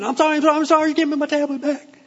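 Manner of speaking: put-on very high, repentant, pleading little kid voice. Comparing it to kids about to lose their tablet: imitating a repentant child. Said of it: "they get real repentant".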